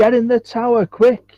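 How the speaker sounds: shrill, very high, urgent shout. A narrator voices people in a crowd shouting advice, shouting. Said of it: "others just shouting".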